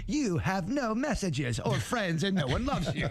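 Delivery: mock pitying, sad, condescending machine-like voice. Imitating the answering machine's recorded voice: imitating a sad, condescending answering machine voice. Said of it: "sad and condescending".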